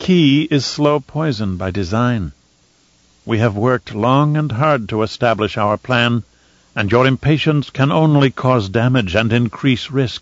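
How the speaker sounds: plain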